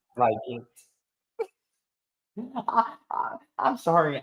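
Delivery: slow, breathy whisper, laughing through the words. Reacting to a funny viewer comment, laughing while talking. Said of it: "I'm trying not to laugh".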